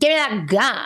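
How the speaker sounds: cutting, sharp-tongued tone. Demonstrating how to ask for something with a sharper tongue, sharp-tongued. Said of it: "using a sharper tongue".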